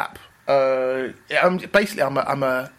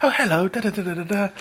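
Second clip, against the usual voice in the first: put-on posh accent, much higher and slower; 5 semitones higher than usual. Imitating a wise woman from london, in a really posh voice. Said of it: "Really posh voice".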